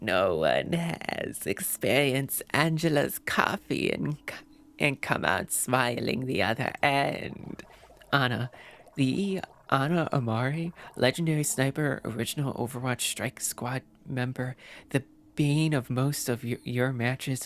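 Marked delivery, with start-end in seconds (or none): 0.0-7.6 put-on tired, worn-out elderly woman's voice. Narrating an Overwatch story, voicing the sniper Ana: old lady voice as Ana. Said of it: "I'm giving her such an old lady voice".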